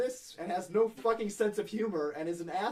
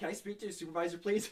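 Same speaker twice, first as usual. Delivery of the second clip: usual speaking voice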